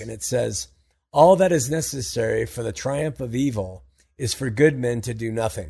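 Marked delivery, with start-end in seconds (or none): none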